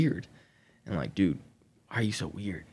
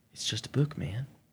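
put-on sly, offhand, dismissive tone; 4 semitones higher, 3 dB quieter than usual. Retelling how the other person answered when confronted about a witchcraft book: imitating a sly tone. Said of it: "just sly".

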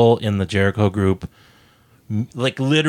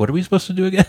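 high, confused, clueless-sounding voice. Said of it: "I'd be like".

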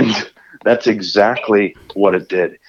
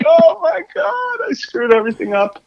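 very high, crazed, frantic screaming. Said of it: "screaming like that".

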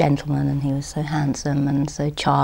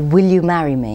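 imitated very loud speech, much louder; 6 dB louder than usual. Recalling an older man who kept asking the speaker to marry him, imitating a very loud voice. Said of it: "he used to say in a very loud voice".

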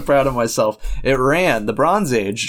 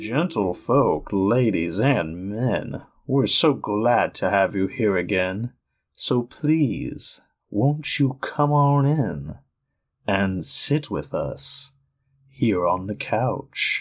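fake seductive, sexy voice, quieter; 2 semitones lower, 4 dB quieter than usual. Opening a podcast about movies and TV in character: mock seductive voice. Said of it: "I hope that was seductive enough".

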